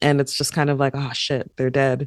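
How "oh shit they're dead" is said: hollow, put-on remorseful, regretful tone. Retelling how a scene's deaths felt to another viewer: mock remorseful reaction. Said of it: "You sound so remorseful".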